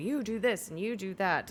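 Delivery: bossy barking voice, pitched high. Playing a first mate in a crisis, barking orders at random people. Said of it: "start barking orders at random people".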